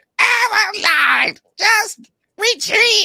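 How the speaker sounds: very high, slow, drawn-out, tired-sounding voice. Showing how the comic should be heard: high-pitched Cobra Commander voice. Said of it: "that high pitch".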